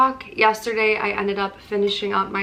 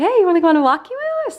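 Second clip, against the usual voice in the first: very high, loud, cutesy dog-talk voice; 9 semitones higher, 5 dB louder than usual. Explaining the company name walkie woo, little talking-to-dog voice. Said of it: "in your little dog voice".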